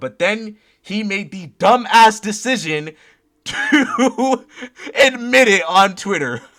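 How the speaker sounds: very loud speech broken by laughter. Telling how someone admitted reporting a video on Twitter: laughing while talking. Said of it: "I'm sorry for laughing so much".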